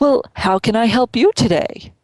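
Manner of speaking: fake, drippy, high, greasy used-car salesman voice. Retelling how a man greeted him at a networking event, as a greasy used car salesman. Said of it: "drippy, greasy used car salesman".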